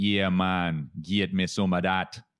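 slow, drawn-out put-on Jamaican accent. In a group conversation, illustrating how people talk: put-on Jamaican accent. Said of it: "if you think about the Jamaican accent".

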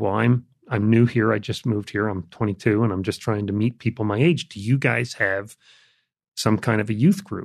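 ordinary talk, nothing marked

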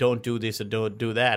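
ordinary talk

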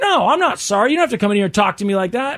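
heated, angry, full-fight arguing back. Retelling a pharmacy argument that turns into a fight: imitating an angry employee arguing. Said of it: "Now they're full on fighting".

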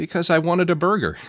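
mock voice, high, on the verge of tears. Retelling Elijah's answer when asked why he was sad: imitating Elijah on the verge of tears. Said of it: "on the verge of tears".

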